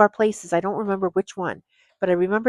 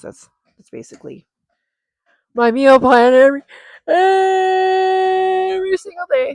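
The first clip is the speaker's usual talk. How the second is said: very high, loud, stretched yawning speech, every word drawn out; 11 semitones higher, 7 dB louder than usual. Wrapping up a description of their daily meal plan, the speaker talks while yawning. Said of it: "Sorry, I was yawning".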